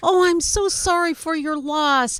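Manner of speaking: mock polite Canadian-sounding voice. Retelling what strangers said after a team lost: imitating a polite Canadian. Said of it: "some really nice Canadian was coming up and saying".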